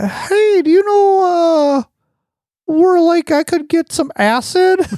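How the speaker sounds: very high, squeaky voice. Recounting a guy asking the speaker's contact for acid, imitating Connor's high voice. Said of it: "real like high pitched like".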